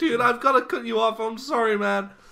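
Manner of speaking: put-on very loud, high-pitched, semi-American accent. Showing how Andrew Garfield talks: semi-American accent as Andrew Garfield. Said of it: "That's how he talks. He's like".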